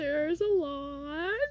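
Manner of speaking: giggly, high, talking through laughter, drawn-out. Settling down after gushing over Slug, ready to answer, laughing.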